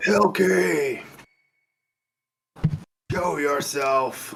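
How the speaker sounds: booming, bellowing giant's yell. Voicing a character calling out a name to someone hidden: deep Goliath bellow. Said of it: "bellow in his deep Goliath-y voice and yell".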